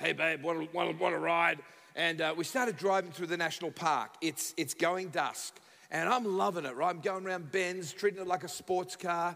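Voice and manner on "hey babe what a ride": put-on sleazy voice, slower. Retelling picking someone up in the car, greeting them in a put-on sleazy voice. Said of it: "my sleaziest voice".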